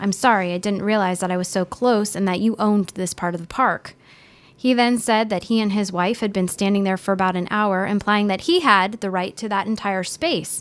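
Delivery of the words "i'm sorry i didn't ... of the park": ordinary talk, nothing marked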